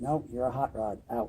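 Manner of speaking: normal talking voice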